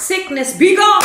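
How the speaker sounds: loud, high, commanding delivery.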